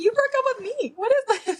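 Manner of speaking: high, loud incredulous tone.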